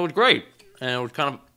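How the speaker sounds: speaking with food in mouth. Recalling a recent day with a friend, choking on food while talking. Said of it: "I'm almost choking on my sandwich".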